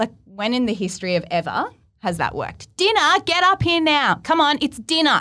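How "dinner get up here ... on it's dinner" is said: shrill, very high, acted-out shout. Acting out calling kids upstairs from the kitchen, acting out yelling for dinner. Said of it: "I'm yelling out".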